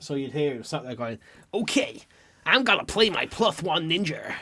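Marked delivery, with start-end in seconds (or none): 1.5-4.3 played-up, put-on Western cowboy accent. Imitating a player with a cowboy accent during a Yu-Gi-Oh game, put-on cowboy accent. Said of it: "he had a cowboy accent".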